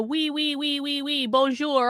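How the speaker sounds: slow, put-on French accent, words drawn out. Mocking French visitors who barely speak English: mock French accent. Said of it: "all this stuff with a French accent".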